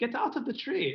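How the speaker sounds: put-on German accent, very high pitch. Retelling a man's words to friends, imitating Ulf's German accent. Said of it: "German from mine".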